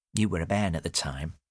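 ordinary delivery

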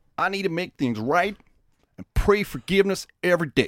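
put-on Sheboygan accent. Retelling a man's statement in court: attempted Sheboygan accent. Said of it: "I don't know the Sheboygan accent, but I'll go with this one".

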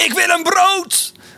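mock abrupt demanding shout, very high, drawn out. Retelling what an older man suddenly shouted out, retelling a sudden shout. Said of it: "En die riep gewoon ineens zo".

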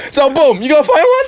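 cocky, boastful, self-hyping tone.

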